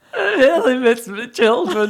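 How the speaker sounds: put-on cracking, tearful voice. Retelling a moment of filling up while talking about working away, retelling a breaking voice. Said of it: "And my voice went".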